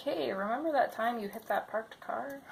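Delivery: ordinary delivery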